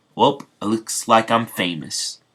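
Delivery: plain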